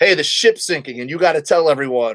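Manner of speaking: ordinary delivery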